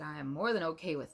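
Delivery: ordinary talk, nothing marked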